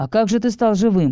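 ordinary delivery

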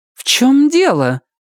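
very high, haughty, arrogant voice. She replies to a man who says she must protect him, haughty question. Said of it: "высокомерно спросила".

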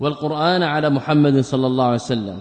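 ordinary talk, nothing marked

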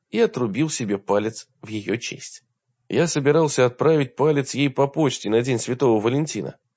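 plain reading voice

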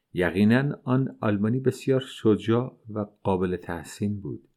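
ordinary talk

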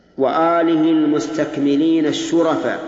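normal talking voice

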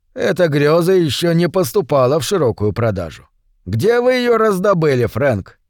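ordinary delivery

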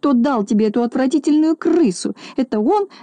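high-pitched, sharp shouted outcry. A pet's owner points at the one she blames for the rat, shouting. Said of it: "закричала она".

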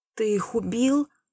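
horrified tone. The narrator puts a question to Tsvark, asking in horror. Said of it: "С ужасом переспросил я".

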